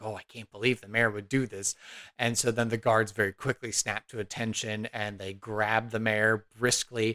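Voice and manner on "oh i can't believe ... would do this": whispering in hushed tones. Narrating for the party, voicing the civil servants to each other: hushed whisper. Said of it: "hushed whispers to each other".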